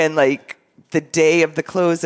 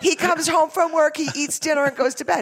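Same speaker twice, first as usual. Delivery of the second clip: imitated scream, higher pitch; 12 semitones higher, 3 dB quieter than usual. Retelling what a client's wife said on the phone: imitating her screaming. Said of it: "she's screaming at me in the phone".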